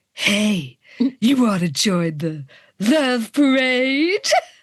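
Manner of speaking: sultry, seductive whisper. A woman at his side whispering in a man's ear, in a sultry whisper. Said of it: "a sultry voice whispers".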